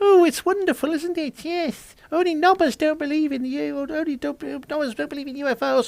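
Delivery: very high, feeble, wimpy little voice. Speaker mocks a man by quoting him, in a high-pitched wimpy little voice. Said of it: "in a high pitched little wimpy little voice going".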